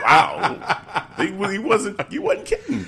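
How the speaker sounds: high, laughing, amazed disbelief.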